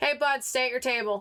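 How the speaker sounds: called out across the room, in character. Speaking in character to someone at another table: raised voice in character. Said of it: "I raise my voice and I go".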